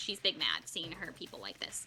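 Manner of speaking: ordinary talk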